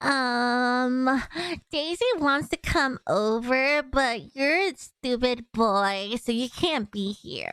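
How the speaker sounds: slowly dragged out, stretched "um". Doing a cow impression from a cartoon. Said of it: "I could do a cow impression".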